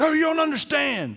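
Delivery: mock furious, very high-pitched angry yell. Retelling what an angry man yelled hours before a game: retelling an angry yell. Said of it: "that made him even more mad".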